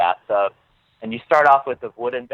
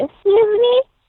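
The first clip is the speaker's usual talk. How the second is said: prim, cute, proper, very high-pitched voice; 6 dB louder than usual. Retelling meeting a fan at Disney World: imitating a fan's proper, cute voice. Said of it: "she was just so proper and so cute, like, her voice".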